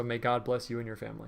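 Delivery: normal talking voice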